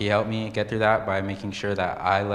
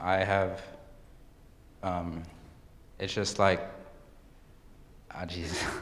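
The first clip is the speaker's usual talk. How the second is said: flustered, nervous, quieter; 7 dB quieter than usual. Speaker talking in front of a group for the first time, nervous. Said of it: "I'm like pretty nervous".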